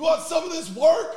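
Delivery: mock, very high, rowdy yell. Imagining a pizza oven rolling down the sidewalk toward a bar: imitating a yelling pizza oven. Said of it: "your pizza oven just yelling".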